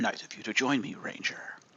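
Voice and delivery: bad, hushed, breathy gruff voice. During a game, voicing Kruger as a Ranger joins him, in a terrible Kruger voice. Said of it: "Still a terrible Kruger voice".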